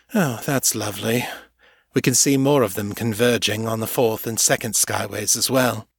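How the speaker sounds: plain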